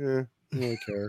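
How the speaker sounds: indifferent put-on Miami voice. Speaker previewing the three parts he'll play, indifferent Miami person voice. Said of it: "just be like a Miami person".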